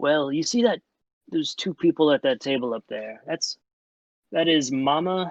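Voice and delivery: mock conspiring, secretive, in-on-a-secret tone. Voicing a character who leans in to point out a table: conspiratorial tone. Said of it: "leans in kinda conspiratorially and goes".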